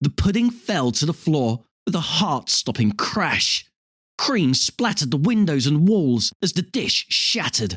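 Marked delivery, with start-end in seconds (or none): none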